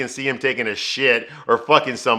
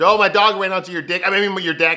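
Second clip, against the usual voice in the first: put-on stutter, much higher pitched; 7 semitones higher than usual. Retelling a woman caught looking at a man in the shower, stuttering an excuse. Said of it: "She stutters some shit".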